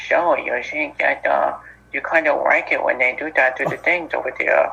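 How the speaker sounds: odd villain voice with weird speech impediment. Complaining about an actor's Joker voice: Barry Keoghan's Joker voice with speech impediment. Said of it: "a weird speech impediment I did not like".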